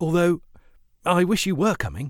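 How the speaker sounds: earnest, heartfelt tone. Narrator reads his reply to a woman who cannot come along, earnest.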